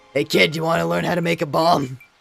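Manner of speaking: mock gruff elderly male voice. Voicing an old alchemist character offering to teach a bomb: Grunkle Stan type voice. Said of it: "a little bit of that Grunkle Stan type voice".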